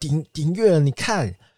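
high, proud, boastful tone. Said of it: "很骄傲的跟他说".

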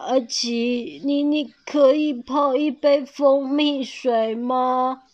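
weak, feeble, drained voice, slow. A sick friend lying under the tree asks Aqi a favor, weakly. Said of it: "虚弱的说".

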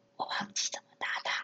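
barely audible whisper, tiny small voice. Retelling telling the driving coach they forgot how to shift: imitating own quiet little voice. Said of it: "我就小小声地说".

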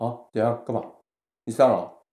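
acted, cold, detached, indifferent, unbothered voice. Retelling how the other person reacted, imitating a cold indifferent voice. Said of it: "一个很冷淡的声音说".

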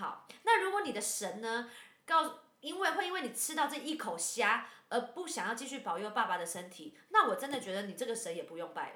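acted-out angry ranting. Recounting a family argument, reenacting an angry outburst. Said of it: "我怕那个声音爆炸".

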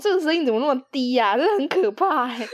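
normal talking voice

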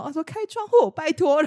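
put-on shout. Recounting how people yell at whoever sits by the window: retelling a shout. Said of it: "他们就直接大吼".

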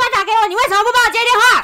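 play-acted, very high, shrill, furious angry yell. Retelling how an ex angrily cursed over an unanswered call: imitating someone yelling angrily. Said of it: "他就破口大骂说".

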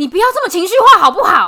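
shrill, very loud shouting at full volume. Retelling a man arguing with his wife at the elevator; imitating a man yelling loudly. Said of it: "很大声".

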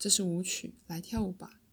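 ordinary delivery

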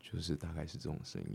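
deep, very soft murmur. Answering a request to show the lowest voice: deliberately lowered voice. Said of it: "那你现在可以一个最低的声音吗？".

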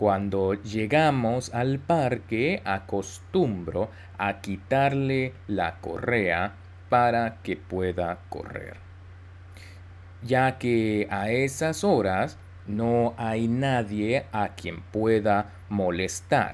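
slow, careful reading in Spanish.

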